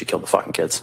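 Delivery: normal talking voice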